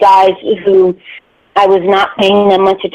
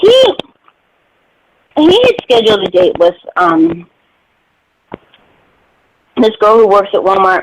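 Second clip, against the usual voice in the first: talking while chewing, mouth full. Speaker telling a story while eating, talking while chewing. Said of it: "I'm sorry if I'm chewing loudly in your ear".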